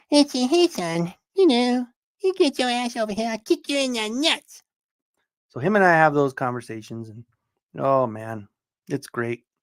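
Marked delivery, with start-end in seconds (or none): 0.1-4.6 very high cartoon voice swinging way up and around. A father joking with his son, doing a Cartman voice. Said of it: "full conversations in Cartman voice".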